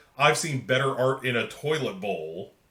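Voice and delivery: ordinary talk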